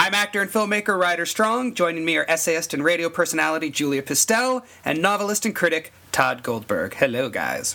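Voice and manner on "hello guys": very low, sultry, seductive voice. Podcast host greeting two guests, with a sexy hello. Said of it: "I was doing my sexy hello".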